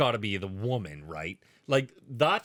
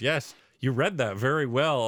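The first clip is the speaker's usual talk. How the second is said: mock sarcastic tone. Retelling a trial moment with a lawyer reading: imitating Johnny Depp's sarcasm. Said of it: "He's so sarcastic to this fucking guy".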